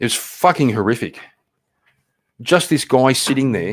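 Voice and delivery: upset, riled, agitated and getting worked up. Describing a man who was shot while sitting there, getting worked up. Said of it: "now I'm getting worked up".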